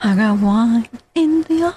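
play-acted mournful, sorry-sounding, sorrowful tone. Repeating a woman's words after she declined a drink, in a mock-sorrowful repeat. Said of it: "She said that with sorrow in her tone".

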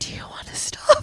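soft, hushed whisper. Retelling how the other speaker whispered a question into the microphone: imitating Parker whispering. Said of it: "Parker's like".

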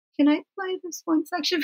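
high, soft, voiceless half-whisper. Retelling asking a husband in the car to play a section: imitating own past half-whisper.

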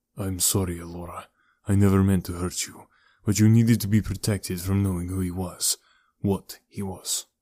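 plain reading voice

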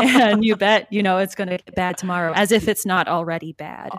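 normal talking voice

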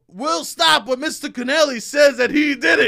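high, loud, taunting drill sergeant voice. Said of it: "And he go".

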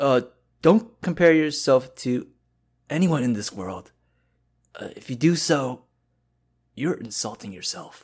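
put-on old man voice. Friends ask for a line in a voice, so the speaker does an old man's voice. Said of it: "Old man's voice".

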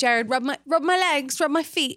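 put-on British accent. Quoting a favourite movie character's line, in a put-on British accent. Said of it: "I always do it with my British accent".

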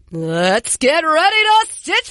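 game show host announcing. Doing the Stitch Fix ad read as a game show host, as asked: Michael Buffer announcer voice. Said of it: "do the ad read like you are a game show host".

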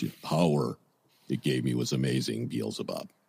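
very low, deep, bottom-of-the-range voice. Quoting what a woman said, imitating her very low voice. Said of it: "she still had a very low voice".

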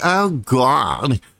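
high, wild, outspoken outburst, "God" drawn out. Imitating how some people talk when they speak, mock wild outspoken voice. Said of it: "really outspoken and really wild when they speak, like, oh God, like this".

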